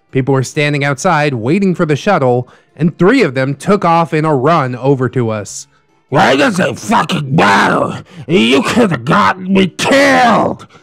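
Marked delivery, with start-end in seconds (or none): 6.1-10.5 acted, high, ragged, rough screaming half-yell. Retelling an argument in a parking lot, imitating a man screaming. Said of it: "he was screaming".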